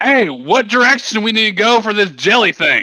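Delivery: very high, loud in-character yell. Calling back in character to the dwarves behind, asking the way: yelling in character. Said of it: "I'm yelling at the dwarves back behind me".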